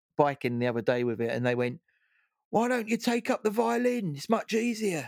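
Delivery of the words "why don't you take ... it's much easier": mock, raised, high-pitched shout. Retelling a passerby shouting at a cyclist: imitating someone shouting. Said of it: "someone shouted at me".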